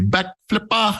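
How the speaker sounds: put-on butchered New Zealand accent. Saying a phrase as a joke in a butchered New Zealand accent. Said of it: "using what will be only considered a butchered New Zealand accent".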